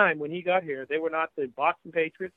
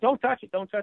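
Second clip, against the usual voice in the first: put-on yelling, pitched up; 6 semitones higher than usual. Retelling a warning shouted at a first press conference: imitating people yelling. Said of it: "people started yelling at him".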